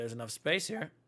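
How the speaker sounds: voice cracking and breaking. Inviting two exhausted people to rest here first, voice cracking. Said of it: "Voice crack".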